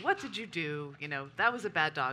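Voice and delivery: ordinary talk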